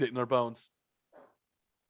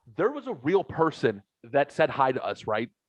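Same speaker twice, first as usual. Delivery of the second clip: ordinary talk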